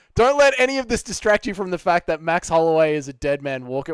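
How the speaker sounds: normal talking voice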